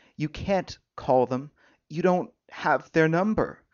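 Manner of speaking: plain reading voice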